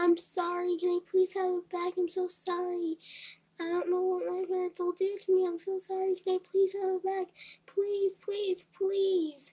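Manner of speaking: mock crying, high, loud, desperate, tearful pleading tone. Speaker retells pleading to get a confiscated phone back: retelling a crying plea. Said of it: "when I started to cry".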